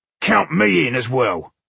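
rough, creaky, growling snarl. Narrator reads Kragnar's line as he glowers at the others, snarling. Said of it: "he snarled".

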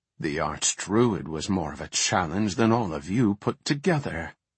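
ordinary delivery, nothing marked

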